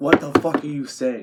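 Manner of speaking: ordinary talk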